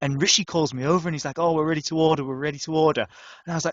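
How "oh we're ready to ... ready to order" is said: plain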